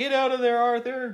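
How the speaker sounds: mock yelling. Retelling a scene where a man yells to arthur to get out, retelling a yell. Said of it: "So he's yelling down".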